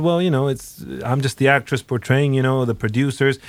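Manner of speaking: ordinary talk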